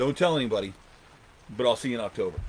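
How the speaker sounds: ordinary talk, nothing marked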